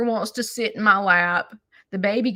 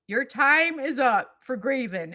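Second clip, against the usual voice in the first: put-on smart speaker voice; 3 semitones higher, 3 dB quieter than usual. Retelling the smart speaker's reply to a request: imitating Alexa. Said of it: "Alexa will go".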